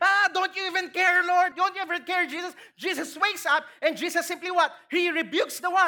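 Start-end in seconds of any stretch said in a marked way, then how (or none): 0.0-2.5 crying out in a scream. Retelling the disciples crying out to Jesus in the boat: imitating people screaming. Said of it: "They were screaming".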